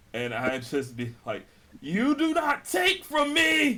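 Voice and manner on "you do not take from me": acted, very high, loud, furious yell. Playing a character who lost a companion, shouting at the thief: in-character angry shout. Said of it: "this is the most anger I have shown".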